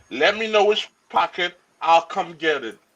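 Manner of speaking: normal talking voice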